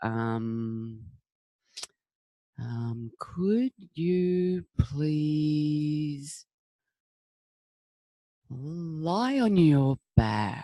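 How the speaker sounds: very slow, soft, stretched out, drawn-out ums. A teacher showing a class what talking really slowly sounds like. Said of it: "if you talk really slowly".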